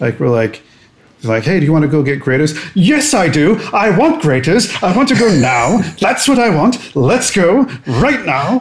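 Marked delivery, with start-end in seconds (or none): 2.7-8.6 high-pitched, shouting rant. Recalling leaving the film with a friend, speaker shouts like John Oliver. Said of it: "start shouting like John Oliver".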